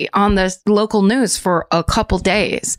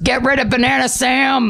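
mock angry fatherly voice; 4 semitones higher than usual. Recalling watching the news at home, the speaker quotes their dad, imitating dad sounding angry. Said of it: "like all angry".

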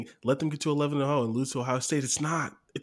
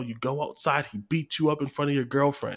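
ordinary delivery

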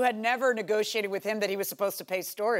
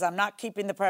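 ordinary talk

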